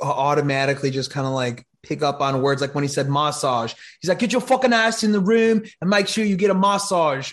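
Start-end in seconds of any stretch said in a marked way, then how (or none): 4.2-7.3 put-on English accent, pitched up higher. Retelling what the English-accented coach told players: Aiden Durde impression. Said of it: "the one with the English accent".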